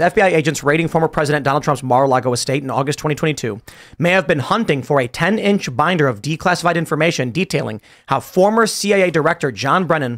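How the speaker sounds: usual speaking voice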